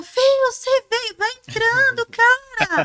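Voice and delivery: mock shouting. Acting out a host shouting from the bedroom to an arriving guest: imitating someone shouting.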